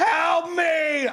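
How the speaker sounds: mock very high, shouted screaming meltdown. Retelling yelling at an automated phone menu: imitating own screaming. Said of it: "I'm screaming and just melting down".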